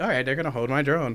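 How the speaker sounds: ordinary talk, nothing marked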